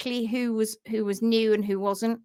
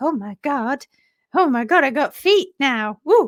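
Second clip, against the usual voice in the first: mock thrilled, amazed, excited, drawn-out exclamations; 3 semitones higher, 4 dB louder than usual. Reading that Polka's shoes are off, then voicing Polka, excited. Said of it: "Polka's like".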